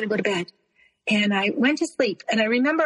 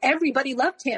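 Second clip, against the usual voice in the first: usual speaking voice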